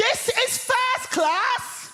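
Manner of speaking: high, shrill yell at full voice. Telling how a woman in a first-class train carriage reacted to them, retelling a woman's shout. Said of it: "at the top of her voice, she shouts".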